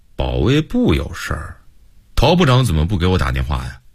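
plain reading voice

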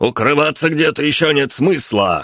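hollered, high shout. Narrator reads one of the fighters calling out to the group, shouted. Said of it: "крикнул один из бойцов".

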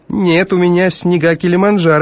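very high, sneering, snide, snarky. Steen answers Carmody's question about what he washes with; snidely. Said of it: "ехидно сказал Стин".

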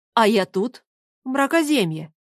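usual speaking voice

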